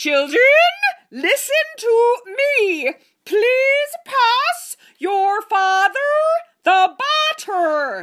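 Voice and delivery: very high, loud, unnatural voice. Reading a story, Missus Burbank speaks to the children in a high, unnatural voice. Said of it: "said in a high, unnatural voice".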